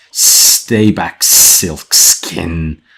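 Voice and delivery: loud, hard hissing delivery. Narrating a story, voicing one of the colonists who close ranks: hissing. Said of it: "One hisses".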